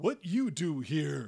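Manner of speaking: loud, slow, lumbering two-headed creature voice, broken speech. Voicing a two-headed humanoid at a desk questioning arrivals: two-headed humanoid voice. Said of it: "a large two-headed humanoid sitting there".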